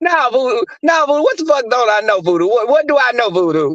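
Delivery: demanding, confrontational tone. Retelling how the panelist Ness confronts Voodoo: imitating Ness confronting Voodoo. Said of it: "And she be like".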